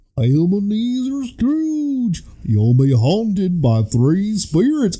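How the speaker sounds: dopey cartoon voice, high and swooping. Asked for a Goofy impression while recapping a Christmas Carol cast, Goofy voice. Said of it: "Your Goofy impression?".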